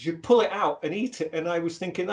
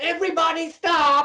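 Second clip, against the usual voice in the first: put-on camp shout, higher and louder; 11 semitones higher, 5 dB louder than usual. Retelling a haircut where the barber suddenly announced it: imitating a camp barber shouting. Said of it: "he's like that".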